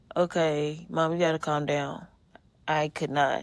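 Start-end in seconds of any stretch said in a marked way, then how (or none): none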